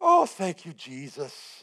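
put-on loud, lilting Irish accent. Speaker retells what he said sitting in a stranger's lap, Irish-sounding accent. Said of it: "I don't know why that sounded Irish".

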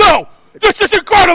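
shrill, all-out, very loud screaming. Retelling how Michael Irvin answered Eisen: imitating Michael Irvin screaming. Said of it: "screaming at him".

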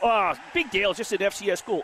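plain

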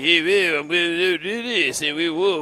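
soft, quiet, fake French accent. Describing a ventriloquist's dummy, the speaker mimics how it talks: Pepe Le Pew voice. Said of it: "Sounds like Pepe Le Pew".

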